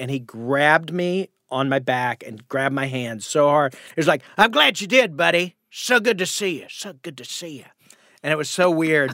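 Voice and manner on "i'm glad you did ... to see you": hearty presidential voice. Retelling a studio meeting, imitating George W. Bush. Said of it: "my George Bush was based on this".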